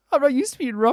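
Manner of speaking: very high, sugary, cutesy voice. Retelling a character's line from a scene being discussed, in a cutesy voice. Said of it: "doing a cutesy voice".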